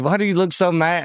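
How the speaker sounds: usual speaking voice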